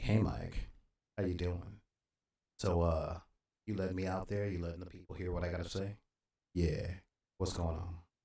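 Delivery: mock seductive low voice. Talking to the microphone so the sound stops cutting out: mock seductive low voice. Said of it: "I'm talking this way to a mic".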